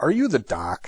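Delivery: play-acted heavy sarcasm, pitched very high. Retelling a paramedic's radio question to a doctor, retelling a sarcastic question. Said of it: "in a very sarcastic tone of voice".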